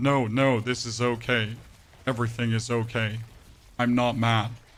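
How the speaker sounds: normal talking voice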